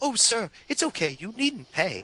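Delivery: high, prim, fussy, polite robot butler voice. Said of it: "sounding like C three P O".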